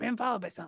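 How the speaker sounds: hushed voice. Warning the party in character they are being followed: quiet voice. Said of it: "quietly been like".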